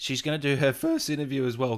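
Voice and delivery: breaking, cracking voice mid-sentence. A host introduces a facial capture actress to viewers, voice cracking. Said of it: "God, voice crack".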